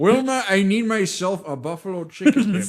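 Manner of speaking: put-on gruff old man voice. Joking about a dip lover, doing a Walter Matthau impression. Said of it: "I'm doing, like, a Walter Matthau".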